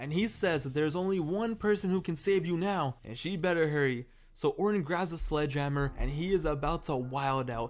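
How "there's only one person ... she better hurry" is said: ordinary delivery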